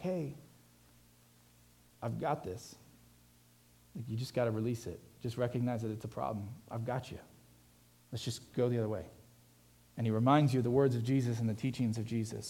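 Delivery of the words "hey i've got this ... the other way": soft whisper, lower and much quieter. Speaker voices the Holy Spirit to someone trying to cope alone, Holy Spirit whispering. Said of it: "the Holy Spirit's just sitting there whispering like".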